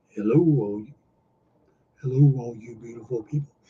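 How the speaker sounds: low, droopy, put-on cartoon character voice. Switching back into a voice he used to do better: Droopy voice. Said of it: "I used to be able to do that voice better".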